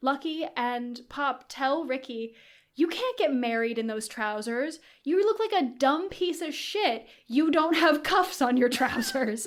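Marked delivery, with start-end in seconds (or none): 2.7-9.5 words squeezed out through laughter. Retelling how two characters mock a groom's trousers: retelling a line said laughing. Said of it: "through tears of laughter".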